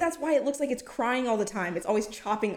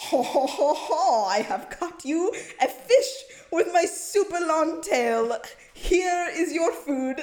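high, silly, goofy cartoon shark voice; 6 semitones higher, 3 dB louder than usual. Giving an example of the voice a thresher shark would speak in. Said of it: "the voice that you think they'd say it in".

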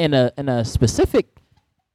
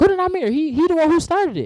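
put-on high-pitched kid voice. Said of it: "And they were like".

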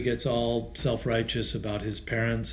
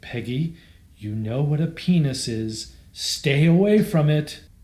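loud, dead-earnest, serious tone; 4 semitones higher, 7 dB louder than usual. Recounting a film scene, quoting a mother's advice to her daughter: mock-earnest delivery. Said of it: "she says to him quite earnestly".

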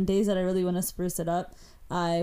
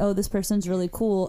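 plain

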